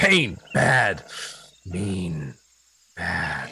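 loud, beastly, snarling growl, word by word. Game master voicing a creature that snaps at a player, growling. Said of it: "He growls".

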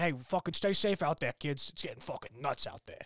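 put-on casual Boston-area accent on every word. Imitating someone's accent after naming it: Pedrick Dempsey's Boston accent. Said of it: "I like Pedrick Dempsey's accent, where he's like".

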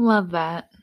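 dry, sarcastic-sounding delivery. Responding to a story about siblings, sarcastic-sounding. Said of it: "That sounded sarcastic".

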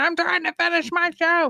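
play-acted very high-pitched scream. Retelling telling the kids off while watching a show: imitating own yelling at kids. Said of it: "I'm fucking screaming at them, going".

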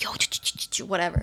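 very quiet, hushed, breathy whisper. Showing how people whisper into someone's ear with a hand, whisper. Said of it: "whisper like this".

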